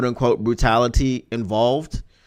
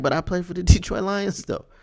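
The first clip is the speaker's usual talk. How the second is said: put-on anxious, fearful pleading, pitched up; 7 semitones higher than usual. Retelling how a player tried to sway someone, mock-pleading. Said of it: "There was fear in his voice. ... he was pleading his case".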